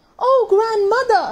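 speaking with a gasp. The girl opens the door and speaks to her grandmother, gasping. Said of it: "she gasped".

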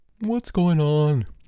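sleepy, half-awake. Someone in room 211, disturbed by commotion in the hall, asks sleepy. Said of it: "asked a sleepy voice from 211".

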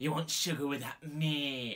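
put-on Scouse accent, "me" drawn out. Speaker mimics a staff member he once hired: imitating Steve's Liverpool accent. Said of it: "this dickhead named Steve from Liverpool".

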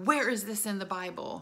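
mock sudden outburst, scream held back, mild. Retelling how a woman suddenly exploded during the sermon: retelling a scream.

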